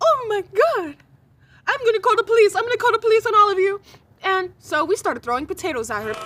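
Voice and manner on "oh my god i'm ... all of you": high-pitched, loud, failed attempt at a Nigerian accent. Retelling a group home staff member's reaction, the speaker attempts a Nigerian accent. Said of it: "I'm trying to like rep- replicate the the Nigerian accent".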